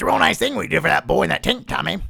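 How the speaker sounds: rough, creaky, scraped-out put-on voice. Answering a viewer's request for a Nick Nolte impression: Nick Nolte voice. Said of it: "that's my Nick Nolte impression".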